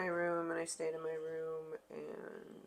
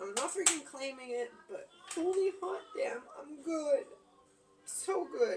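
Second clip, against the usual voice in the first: tearful words pushed out through crying, pitched up; 9 semitones higher than usual. After hard days, the speaker tells listeners how they are, crying. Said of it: "Here I am crying for all to see".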